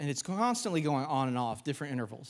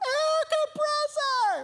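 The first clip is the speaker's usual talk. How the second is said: screaming at the top of the lungs, high, slow. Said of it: "screaming at the top of our lungs".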